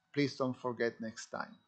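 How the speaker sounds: ordinary delivery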